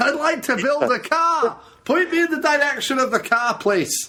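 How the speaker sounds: high, put-on Scottish accent. Improvising as guys from Edinburgh visiting Detroit to learn about cars: put-on Scottish accent. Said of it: "a couple of guys from Edinburgh".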